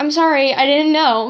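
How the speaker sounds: plain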